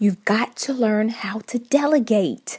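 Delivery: whispering. Speaker stressing an important third tip to listeners, whispering. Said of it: "Yes, I'm whispering".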